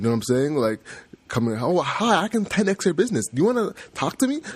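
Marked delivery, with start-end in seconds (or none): 1.6-4.4 very high, pushy, salesy spiel. Mocking a pushy stranger reaching out on LinkedIn: imitating a pushy LinkedIn seller. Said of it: "someone who has LinkedIn breath".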